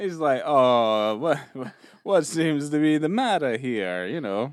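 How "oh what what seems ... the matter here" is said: put-on Italian-accented speech. Retelling a film scene where a man caught in the act turns around: Gino's Italian accent. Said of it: "in an Italian accent".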